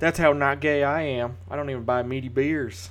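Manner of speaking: put-on very loud Alabama Southern accent. Chatting with co-hosts about beers, in an Alabama accent impression. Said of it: "That was my impression of a guy from".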